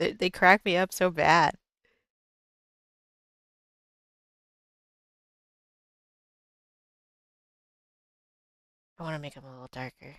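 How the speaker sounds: giggling through words. Drawing toes and apologizing for laughing: laughing while talking. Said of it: "I keep laughing at these toes".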